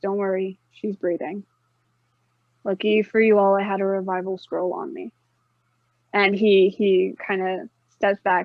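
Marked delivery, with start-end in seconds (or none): 0.0-5.1 very deep, composed and steady voice. Voicing a character who lays someone down before a skeptical group, very deep but calm voice. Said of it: "in a very deep but calm voice".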